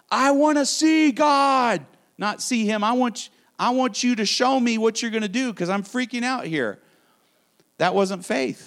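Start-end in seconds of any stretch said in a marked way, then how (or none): 0.1-6.8 mock yelling cry, high-pitched, reined in to half-yell. Retelling once screaming at God in a difficult time: imitating own past yelling. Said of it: "literally yelling at God".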